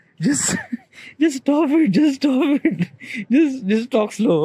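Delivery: put-on high, slow, scolding voice.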